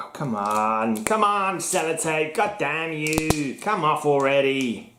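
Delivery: put-on New York accent. Struggling with Sellotape, the speaker mutters in a fake New York accent. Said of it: "a New Yorker".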